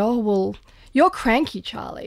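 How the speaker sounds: ordinary talk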